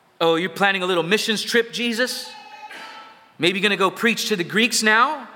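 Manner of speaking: snide, scornful, mocking, sarcastic taunting tone. Explaining a scripture passage, voicing the religious leaders, acting out sarcastic mockery. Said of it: "These men are being sarcastic".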